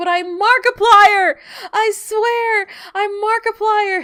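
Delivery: mock distressed, very high, slow upset voice. Retelling how he answered your warning about jail, act it out imitating someone so distressed. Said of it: "he was like so distressed".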